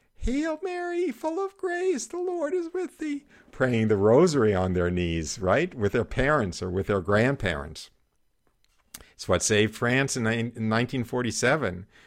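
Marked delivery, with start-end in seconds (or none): 0.2-3.2 put-on tiny, very high, soft little child voice. Imagining little children praying the rosary, in a high little child's voice. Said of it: "with the high little voices saying".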